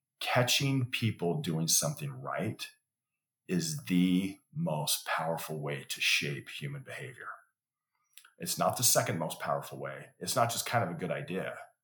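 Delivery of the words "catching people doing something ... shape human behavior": slow, deliberate, word-by-word delivery. Repeating the main point a second time: slowly. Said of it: "I'm gonna say it again slowly".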